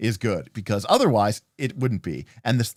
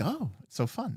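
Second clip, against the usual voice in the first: soft, hushed, pitched-up voice, sugary sweet and cheery; 5 semitones higher, 11 dB quieter than usual. Mocking how the game's sentence phrases its promise, in a mock-nice tone. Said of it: "They're saying it very nicely".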